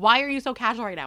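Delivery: mock-panicked, acting out freaking out. Retelling a lost ring, asking a casual friend, acting out panicking. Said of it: "I'm like panicking and freaking out".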